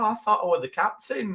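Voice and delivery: acted very high, let-down, crestfallen disappointed tone. Retelling a character's reply when asked what he does, mock-disappointed. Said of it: "he's almost like disappointed".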